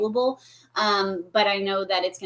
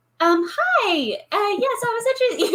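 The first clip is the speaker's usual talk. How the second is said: put-on young woman voice, much higher, slower; 13 semitones higher, 5 dB louder than usual.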